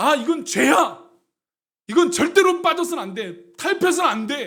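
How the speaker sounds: firm, resolute tone.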